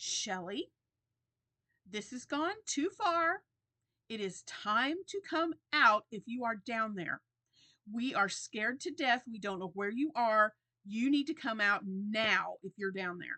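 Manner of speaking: firm, stern, yet very calm voice. Retelling how she called down to the hiding kids, stern but calm. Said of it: "It was stern, but it was very calm".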